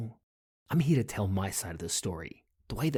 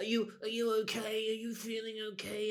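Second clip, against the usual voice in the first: high, doting, fussing motherly voice; 13 semitones higher, 6 dB quieter than usual. Imitating her fussing over dad like a mother: imitating her as a mummy. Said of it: "she's the mummy".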